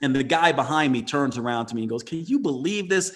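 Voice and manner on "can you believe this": incredibly angry, furious, exasperated grumble. Retelling what the guy behind in line said: imitating incredibly angry speech. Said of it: "Incredibly angry".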